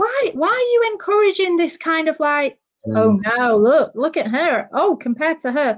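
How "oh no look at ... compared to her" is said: put-on American accent suddenly slipping out. Speaker mocks 'who wore it better' posts, slipping into an american accent. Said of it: "I don't know why the American accent came out there".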